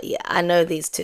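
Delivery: ordinary delivery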